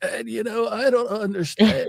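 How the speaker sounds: slow, high-pitched, dragged-out delivery. Mocking liberals who imitate a politician's voice: imitating Bobby Kennedy voice. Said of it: "they're all doing the Bobby Kennedy voice".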